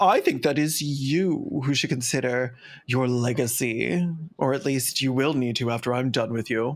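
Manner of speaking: extremely grandiose, lofty, proclaiming delivery. Imitating J K Rowling answering someone mean on Twitter: grandiose J K Rowling voice. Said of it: "She would say it in an extremely, like, grandiose way".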